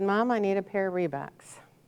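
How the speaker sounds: normal talking voice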